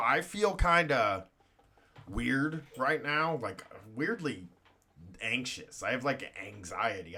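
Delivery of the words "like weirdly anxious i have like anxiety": ordinary talk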